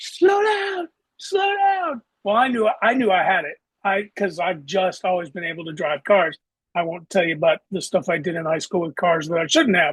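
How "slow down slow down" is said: very high, drawn-out, stretched yell. Retelling a chase as a training officer screams: imitating someone screaming. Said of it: "he's screaming at me".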